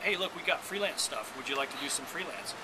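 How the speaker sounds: usual speaking voice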